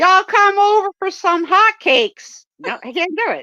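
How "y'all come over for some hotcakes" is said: high, loud, put-on Southern US accent. Joking they can't do it, then trying a put-on Southern accent. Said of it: "I'm not gonna go southern. ... look at me try".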